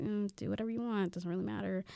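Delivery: very soft, dismissive mumble. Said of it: "we're just kinda like".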